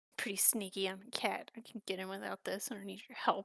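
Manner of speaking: muttering under breath. Playing a cat character who refuses help, muttering under breath. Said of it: "Mutter under my breath".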